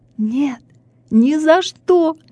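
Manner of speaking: very slow, high, drawn-out hysterical scream. A student pushes away the philologist's hand and gives a hysterical shout. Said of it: "истерично закричала студентка".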